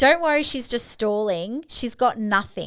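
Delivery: ordinary talk, nothing marked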